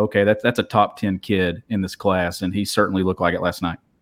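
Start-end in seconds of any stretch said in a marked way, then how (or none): none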